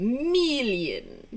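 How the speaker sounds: over-the-top, drawn-out, really evil villain voice. Quoting the villain from a goofball comedy, Dr. Evil voice. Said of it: "like really evil like".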